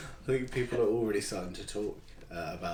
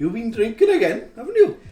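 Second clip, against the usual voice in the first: put-on Welsh twang, much higher, louder; 17 dB louder than usual. Recalling a line from a recording session, delivering it with a Welsh twang. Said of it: "I sort of tried to put a Welsh twang on it".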